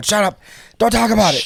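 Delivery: play-acted, high-pitched, shrill yelling. Recalling coworkers asking about the movie: retelling a yell. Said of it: "And I'm yelling at everyone".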